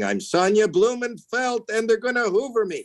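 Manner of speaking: screamed, pitched way up, shrill and high. Retelling a patient on a gurney before surgery: imitating someone screaming. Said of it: "she was screaming".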